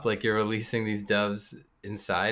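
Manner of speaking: ordinary delivery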